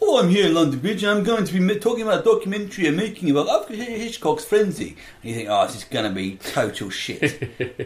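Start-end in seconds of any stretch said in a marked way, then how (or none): 0.0-5.0 very high put-on Dutch accent. Imitating a european guy opening a documentary: fake dutch accent. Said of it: "That's sort of Dutch accent".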